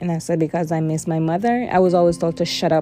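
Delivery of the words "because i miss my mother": ordinary delivery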